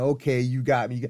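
normal talking voice

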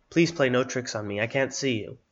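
ordinary talk

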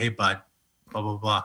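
threatening, confrontational tone, ready to pick a fight. Showing how you greet someone you want to fight, mock-threatening tone. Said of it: "I guess when you want to fight somebody, you're like".

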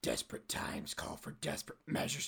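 low, breathy, breathed-out whisper. Acting a skit scene, taking another's smoothie: Jason Statham voice. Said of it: "you're back to your Jason Statham voice".

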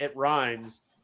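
ordinary delivery

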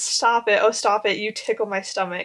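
ordinary talk

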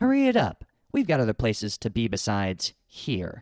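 slow, swooping, scornful, sneering disdain. Narrator reading a well-dressed patron calling to the chronicler from the queue: disdainful. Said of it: "she said disdainfully".

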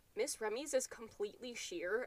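ordinary talk, nothing marked

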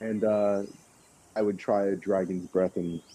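ordinary delivery

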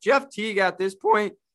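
voice cracking, breaking partway through. Complaining about the Celtics lineups, with a voice cracking. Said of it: "sorry for my voice crack there".

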